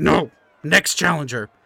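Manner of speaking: furious, fired-up, angry, pissed-off outburst. Voicing Thargor answering the half-elf's offer of a break, angry. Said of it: "He's pissed".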